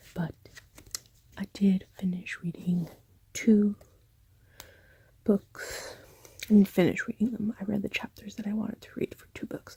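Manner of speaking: light, slight half-whisper. Late at night with parents asleep, talking about books read, whispering a little. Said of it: "I have to whisper a little bit".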